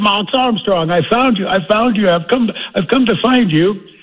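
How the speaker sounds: thick put-on Boston accent. Recalling an elderly man at a farm show, the speaker imitates his heavy boston accent. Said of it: "in a heavy Boston brogue".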